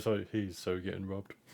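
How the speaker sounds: very hushed, slow, drawn-out mutter under the breath. As another character runs away, a player's character mutters under breath. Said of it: "just under my breath".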